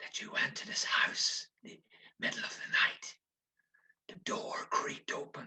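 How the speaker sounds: hushed, breathy, spooky ghost-story whisper. Showing how you'd tell a ghost story, slow ghost-story telling. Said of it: "I'm talking a bit slower".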